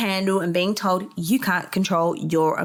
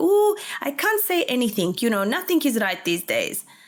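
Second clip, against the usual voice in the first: put-on Greek accent in a motherly voice; 4 semitones higher than usual. Speaker recalling what their mum used to say, imitating her Greek accent. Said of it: "my mum's Greek accent".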